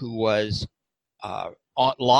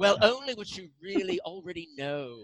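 put-on very high, swooping, poorly done English accent; 13 semitones higher, 6 dB quieter than usual. Speaker quotes a man's words on a show, in a bad english accent. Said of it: "it's a very bad English accent".

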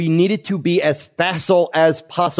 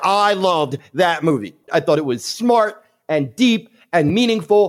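ordinary talk

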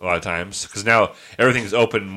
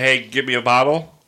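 ordinary talk

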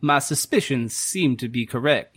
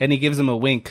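plain

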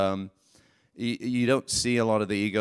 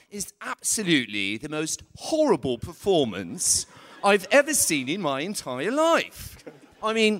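high British voice swinging wide, swooping pitch; 8 semitones higher than usual. Giving listeners an example of people in England, do a Simon Cowell voice. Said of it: "we have examples of people like Simon Cowell".

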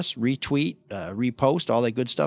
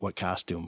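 mock-deadpan, quieter and lower; 7 semitones lower, 10 dB quieter than usual. Retelling his reply to a woman who praised his costume, deadpan.

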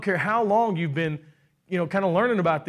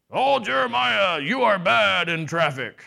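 strange, weird, creaky voice. A speaker shows how the enemy does not talk, in a weird third-party voice. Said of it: "in some weird third-party voice".

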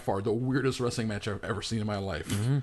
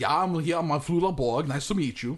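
high, pitched-up, almost fake, unreal-sounding voice; 5 semitones higher than usual. Imitating a German actor whose speech sounds almost fake: Flula Borg impression. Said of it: "Almost sounds fake when he speaks".

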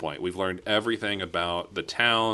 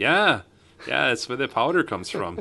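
put-on Minnesota accent, pitched higher; 5 semitones higher, 4 dB louder than usual. Retelling what a guy at the bar said: Minnesota accent. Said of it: "Do the accent".

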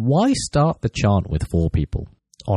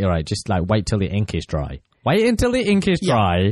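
ordinary talk, nothing marked

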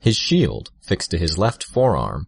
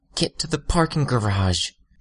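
high-pitched hiss through clenched teeth; 8 semitones higher than usual. Narrator reads a woman's line as Armsmaster steps forward; hissed through her teeth. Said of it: "she hissed through her teeth".

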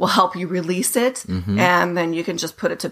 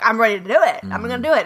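fired-up, emboldened, empowered, resolute tone; 4 semitones higher than usual. Acting out a friend's call that left you feeling empowered: imitating feeling empowered. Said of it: "totally empowered and emboldened".

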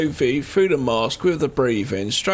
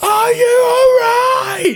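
very high, loud, shrill full-on scream; 7 dB louder than usual. Retelling a film scene where the sheriff screams a question: imitating someone screaming loudly. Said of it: "he screams really loudly in her face".

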